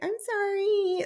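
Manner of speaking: put-on tiny, very high-pitched baby talk voice. Describing a woman's behaviour toward a man while he drives, imitating high-pitched baby talk. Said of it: "this little high-pitched voice".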